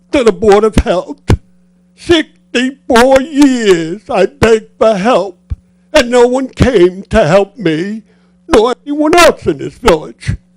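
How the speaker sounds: high, tearful crying voice, speaking through tears. A lifelong village resident addresses the Board of Health, crying while speaking. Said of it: "you're making me cry".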